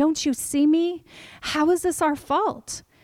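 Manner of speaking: mock angry crying out through tears. Retelling what you said to God back then, retelling a crying, angry plea. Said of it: "I'm just crying, and I'm angry".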